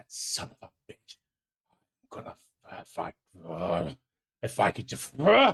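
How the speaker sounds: muttered, half-finished grumbling under the breath. Narrating a character as she walks off, grumbling under her breath. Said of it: "she grumbles under her breath".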